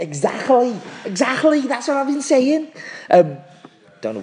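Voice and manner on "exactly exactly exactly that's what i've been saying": Liverpool Scouse accent, pitched very high. Agreeing with the other speaker's suggestion in a scouse accent. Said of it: "went into a Scouse accent".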